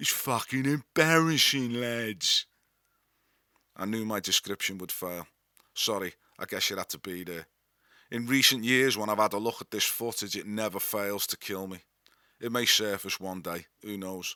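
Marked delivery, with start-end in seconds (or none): 0.0-2.4 slow, stretched-out phrasing. Retelling an impression of a repeated complaint: imitating Tony Pope. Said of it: "doing an impression of Tony Pope".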